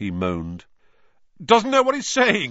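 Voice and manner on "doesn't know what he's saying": very high, shrill, loud voice. A teacher speaks over an injured boy to an anxious crowd, loudly. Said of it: "said Lockhart loudly".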